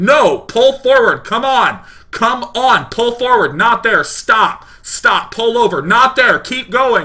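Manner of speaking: annoyed, loud, high-pitched, barked yelling.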